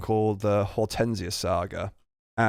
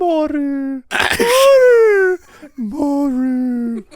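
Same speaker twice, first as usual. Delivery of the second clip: very high-pitched, squeaky creature cry. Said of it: "in a really high-pitched voice".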